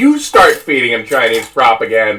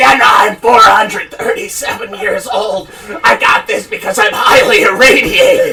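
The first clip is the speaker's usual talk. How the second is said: put-on raspy creature voice, pitched higher; 4 semitones higher than usual. Mocking RFK by doing his voice as a Fallout ghoul: imitating RFK as a Fallout ghoul. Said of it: "he has the voice of a fucking creature".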